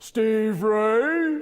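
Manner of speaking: loud, thunderous call with the name stretched out. Speaker retelling a judgment-day vision, calling out a name in God's thunderous voice. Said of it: "God's thunderous voice".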